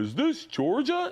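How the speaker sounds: very high-pitched put-on voice. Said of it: "he'd be a perfect Santa voice".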